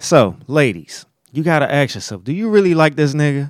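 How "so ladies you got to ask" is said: usual speaking voice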